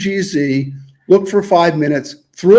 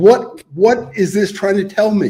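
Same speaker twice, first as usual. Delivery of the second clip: higher, exasperated, frustrated outburst; 4 semitones higher than usual. Retelling getting desperate while searching, throwing up hands: retelling own exasperated outburst. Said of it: "throwing up my hands and go".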